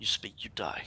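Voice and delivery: threatening theatrical whisper. Holding him with a longsword across his throat, whispering in his ear. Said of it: "I'm going to whisper in his ear".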